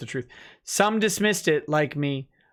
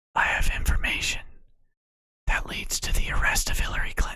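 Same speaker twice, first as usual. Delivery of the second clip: put-on whisper. Speaker acting out what a man whispered to someone, retelling a whisper. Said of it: "Vic leaned in and whispered".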